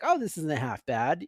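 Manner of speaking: ordinary delivery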